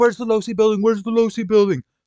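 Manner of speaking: shrill, very high, loud screaming. Retelling a police car on the sidewalk calling out: imitating someone screaming.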